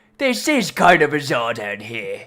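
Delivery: silly put-on character voice, pitch swinging all over. Playing a character who mimics a tiny companion: imitating Elwyn's voice. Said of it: "doing an Elwyn voice while he's doing it".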